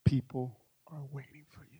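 unvoiced, urgent whisper.

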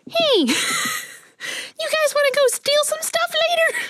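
very high, squeaky, mischievous chipmunk voice. Taking a turn doing voices for the group: mischievous chipmunk voice. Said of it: "This is a little mischievous chipmunk".

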